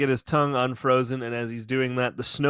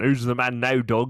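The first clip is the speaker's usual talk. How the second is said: bad put-on Scottish accent. Joking about a snowman cartoon: bad Sean Connery impression. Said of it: "Sean Connery attempt".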